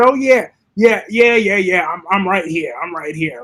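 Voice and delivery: mock villain voice, loud and aggressive. Recounting an actor's line from a scene, imitating his aggressive villain attitude. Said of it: "with that attitude in his voice, it had that aggressive".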